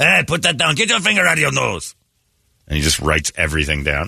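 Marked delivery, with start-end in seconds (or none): 0.0-1.9 fake French accent, higher pitch. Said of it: "a little French accent".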